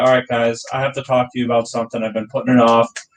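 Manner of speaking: put-on solemn, very serious announcer voice. Retelling how a bandmate addressed the band from the back: retelling a very serious tone. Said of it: "in a very serious tone".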